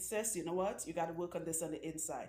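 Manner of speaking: ordinary delivery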